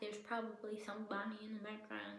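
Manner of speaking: quiet under-the-breath muttering. Voicing a suspicion about an author, said quietly under the breath. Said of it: "Let me just say that quietly under my breath".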